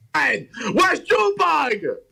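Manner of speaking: shouting. Asking the others where Junebug is, yelling. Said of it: "Why are you yelling?".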